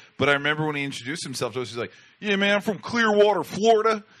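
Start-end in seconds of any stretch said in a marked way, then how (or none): 2.2-4.0 put-on West Coast accent, much higher and louder. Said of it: "that, you know, [name] Doughboy accent".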